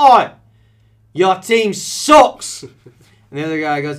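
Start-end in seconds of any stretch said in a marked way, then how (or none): 0.0-2.6 very high, very loud, slow, jeering put-on British accent. Acting out a taunt in a soccer-match parking lot: British accent. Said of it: "let's put a British interpretation on this".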